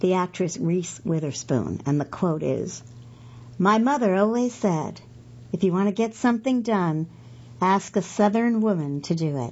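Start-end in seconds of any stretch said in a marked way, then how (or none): none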